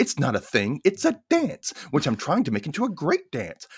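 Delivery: offended, uptight, obnoxious, insulted tone. Retelling a scene where Sharon answers Brian: imitating insulted Sharon. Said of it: "And Sharon is insulted".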